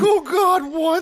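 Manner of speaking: voice cracking upward, very high. Recounting the dad's reaction from upstairs, imitating a cracking voice. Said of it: "You could hear his voice crack".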